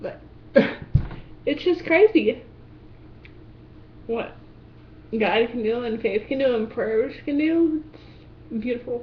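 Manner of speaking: voice catching, choked up with tears. Speaking to an audience about faith and prayer, tearing up. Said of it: "well, I am tearing up".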